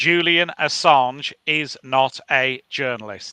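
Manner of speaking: slow, deliberate, each word placed carefully. Starting a rant when asked what they've got, said slowly. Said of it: "I want to say it slowly".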